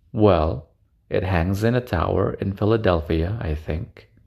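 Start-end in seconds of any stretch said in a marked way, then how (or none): none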